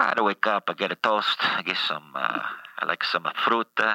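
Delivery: fake Italian accent mixed with Italian words.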